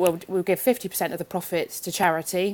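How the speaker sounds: ordinary delivery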